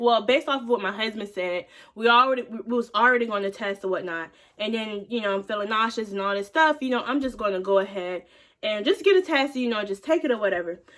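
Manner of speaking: normal talking voice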